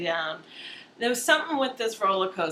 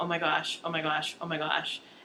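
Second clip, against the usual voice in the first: quieter, acted-out, put-on panicked voice; 3 semitones lower, 4 dB quieter than usual. Retelling a ride, the speaker acts out their past panicked exclamations. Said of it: "I was almost having a panic attack".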